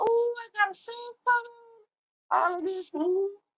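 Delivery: acted-out, thrilled, very high-pitched, giddy gush. Retelling a parent getting a first cell phone: imitating an excited mom. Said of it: "My mom was real excited".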